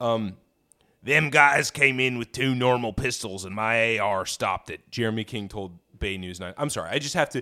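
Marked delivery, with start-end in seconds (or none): 1.0-4.7 put-on folksy voice, louder. Reading a news quote aloud in the quoted homeowner's voice: imitating Jeremy King's voice. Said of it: "that's the voice I'm reading it in".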